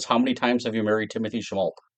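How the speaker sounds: ordinary delivery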